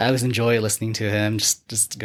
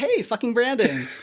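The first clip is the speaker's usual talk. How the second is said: bright, innocent, super cheery, very high pitch; 13 semitones higher than usual. Imitating a mother greeting her son: imitating a cheery mother. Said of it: "super cheery person".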